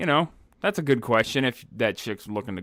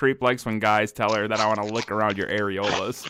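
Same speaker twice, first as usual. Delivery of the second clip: normal talking voice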